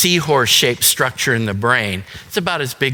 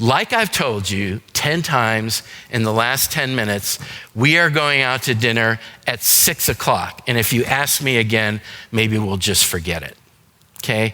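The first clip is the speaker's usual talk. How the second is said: normal talking voice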